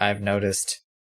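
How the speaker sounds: level, dead flat deadpan with no reaction. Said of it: "He sort of just deadpans".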